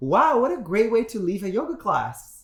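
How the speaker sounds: mock, very high-pitched, full-on sassy tone. Retelling a reply to the yoga teacher: retelling a sassy reply. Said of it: "the sassy queen came out".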